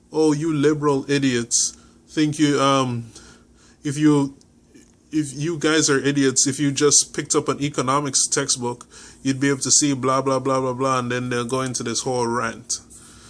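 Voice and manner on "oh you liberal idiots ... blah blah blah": ordinary talk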